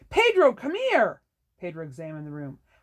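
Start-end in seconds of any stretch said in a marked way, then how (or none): 0.1-1.2 very loud, high-pitched, booming bellow. Narrator reads Lauren calling Pedro into a top-floor bedroom, bellowing.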